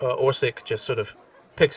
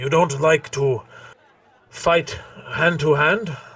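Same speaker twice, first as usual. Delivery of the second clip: put-on loud, slow, unhurried old dwarf character voice; 5 semitones higher, 5 dB louder than usual. Voicing the old dwarf locking eyes with Bardoor: deeper voice of an old dwarf. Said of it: "a deeper voice".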